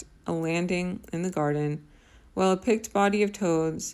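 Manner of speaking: ordinary delivery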